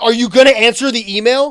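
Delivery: mock very loud, furious, high-pitched voice. Retelling a roommate setting up a system and getting mad: imitating someone angry. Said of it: "he got so mad at me that night".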